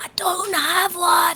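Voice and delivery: put-on whisper. Playing a character who leans over to answer: whispering in character. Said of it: "I'll whisper".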